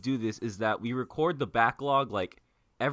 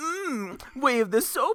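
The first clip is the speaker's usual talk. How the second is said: lame put-on voice, very high, squeaky, slow, drawn-out; 12 semitones higher, 3 dB louder than usual. Imitating another speaker's attempt at Yoda: imitating a bad Yoda impression. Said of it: "you literally sounded like this".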